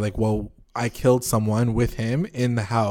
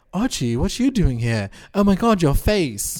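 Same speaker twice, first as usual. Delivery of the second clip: put-on British accent, pitched up; 7 semitones higher than usual. Retelling Veronica's words on seeing Archie: British accent as Veronica. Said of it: "She doesn't have a British accent".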